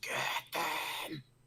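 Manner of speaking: strange, unexpected plant-creature voice. Game master voicing a plant creature turning to the players, weird plant-creature voice. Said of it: "a weird voice that you, I mean, not wouldn't have expected to come from something so planty".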